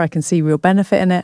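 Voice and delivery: ordinary talk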